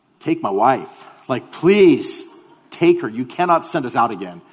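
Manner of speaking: mock imploring, begging tone. Retelling begging the hospital lady to keep his wife in labor: imitating pleading. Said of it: "we're pleading with her".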